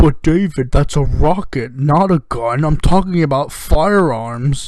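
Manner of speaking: slow, deliberate, cutting delivery. Imitating a reply to David Pakman: Jesse Ventura impression. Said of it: "That's my Jesse Ventura impression".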